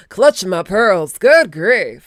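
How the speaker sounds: terrible, fake, put-on Southern accent. Trying out the most southern phrases, in a bad Southern accent. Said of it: "that was the shittest southern accent".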